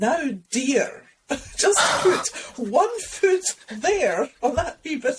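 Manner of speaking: very high, put-on Edinburgh Highland accent. Act out the voice in your head on an exposed hill: Flora McLachlan in cod Edinburgh Highland accent. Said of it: "in this sort of cod Edinburgh sort of Highland accent".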